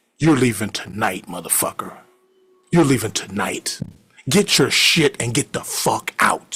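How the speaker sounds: mock deadly serious, threatening tone. Retelling a roommate ordering a guest out: imitating someone dead serious. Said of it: "he was serious".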